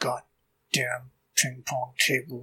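irritated, angry muttering under the breath. Narrating Hopper walking in and going for coffee, Hopper muttering under breath. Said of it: "mutters under his breath".

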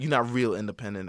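normal talking voice

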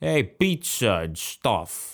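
bad, over-the-top Boston accent, very slow and drawn out. Imitating an actor's film role: Benedict Cumberbatch's horrible Boston accent. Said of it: "he had a horrible Boston accent".

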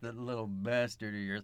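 pushed out through clenched teeth. Quoting a movie character's insult about a child: John Strode line through gritted teeth. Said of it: "he kinda just pushes it through his teeth".

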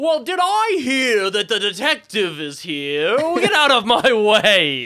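tiny, high pixie voice with huge booming volume. Voicing a tiny pixie calling down from a staircase: booming pixie voice. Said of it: "a pixie with a booming voice".

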